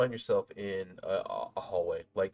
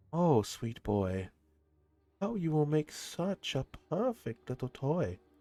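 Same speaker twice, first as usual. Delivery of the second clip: high-pitched, seductive, sultry voice; 7 semitones higher than usual. Voicing a whispering presence heard behind the player: sultry voice. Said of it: "You hear the sultry voice".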